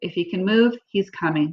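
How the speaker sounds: ordinary delivery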